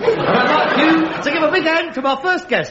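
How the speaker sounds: high, compère-style announcer voice. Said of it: "And this voice says".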